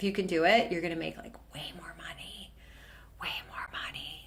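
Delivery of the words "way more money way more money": soft whisper. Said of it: "why am I whispering?".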